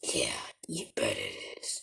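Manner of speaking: slow, breathy, whispered demonic voice. Reading a fan story aloud, Naruto answers: demonic voice. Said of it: "Naruto says with a demonic voice".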